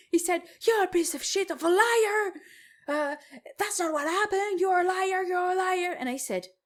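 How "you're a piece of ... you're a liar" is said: high-pitched screaming. Retelling how a customer accused the cashier in the store: imitating a customer screaming. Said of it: "the guy started screaming in the store that I was a liar".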